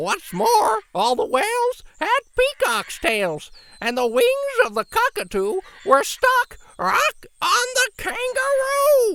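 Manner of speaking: very high, very loud shrill squawking parrot shriek. Narrator reading the parrot's line: shrieking parrot voice. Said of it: "With a shriek, the parrot opened his beak".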